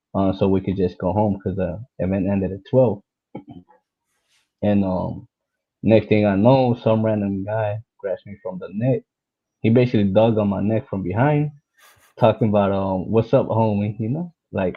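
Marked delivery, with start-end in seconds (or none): 13.1-14.0 put-on cocky male voice with attitude. Retelling a random guy grabbing them from behind: imitating a guy with attitude. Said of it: "with an attitude".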